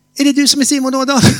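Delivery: put-on nervous fast talking. Retelling an older woman at the door repeating her question, imitating nervous fast talking. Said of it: "Hon pratade lite så här".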